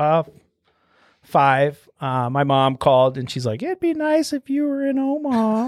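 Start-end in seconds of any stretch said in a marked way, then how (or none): 3.6-5.7 very high-pitched put-on voice. Retelling what mom said on a phone call: imitating mom's voice. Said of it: "just how mom does it".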